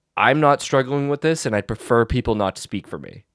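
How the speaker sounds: ordinary delivery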